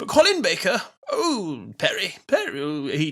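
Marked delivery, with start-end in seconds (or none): 1.8-2.9 put-on jolly old man voice, pitched higher. Talking about Doctor Who actors' voices, doing a Santa-like Colin Baker impression. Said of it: "made him sound like Santa".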